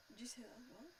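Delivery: soft, unvoiced whisper.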